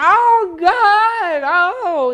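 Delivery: very high, loud, anguished screaming.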